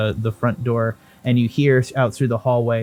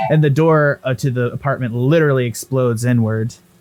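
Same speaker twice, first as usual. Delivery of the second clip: ordinary talk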